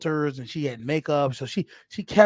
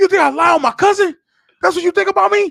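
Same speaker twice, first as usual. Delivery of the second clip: piercing, very loud, rattled-off shouting; 11 dB louder than usual. Retelling an argument after being caught in a lie, retelling own yelling. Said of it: "you commence to start yelling".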